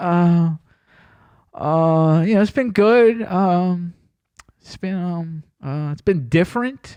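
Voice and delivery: mock very slow, fumbling, halting stop-start speech. Retelling a speech someone was put on the spot to give: imitating awkward fidgety speech. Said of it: "he's fidgeting".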